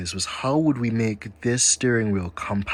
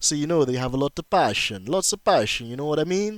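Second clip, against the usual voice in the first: put-on Italian accent, sing-song; 6 semitones higher than usual. Praising the founders' passion, joking in a put-on Italian accent. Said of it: "Please excuse my Italian accent there".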